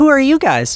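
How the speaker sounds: giggling in a very high-pitched voice. Voicing a character who opens the door and giggles at visitors: giggling. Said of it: "giggles, and goes".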